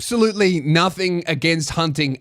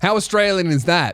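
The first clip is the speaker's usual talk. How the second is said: normal talking voice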